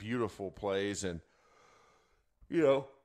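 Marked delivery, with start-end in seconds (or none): 1.0-2.8 words spoken through a yawn. Mid-commentary on the plays, the speaker talks through a yawn. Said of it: "sorry, that was a yawn".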